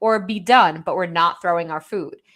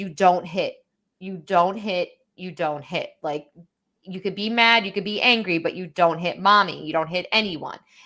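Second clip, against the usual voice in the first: mock, really stern, firm, scolding repeated delivery. A mother retelling scolding her child for hitting, retelling a stern voice. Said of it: "now I'm getting really stern voice".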